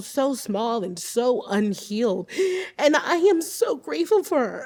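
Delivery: close to crying, tearful, words catching, choking up. Talking about her younger self: tearful, choking up. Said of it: "I did not think I was gonna cry on this".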